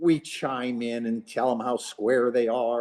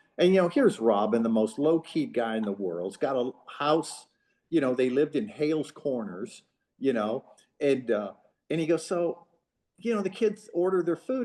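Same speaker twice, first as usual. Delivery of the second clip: plain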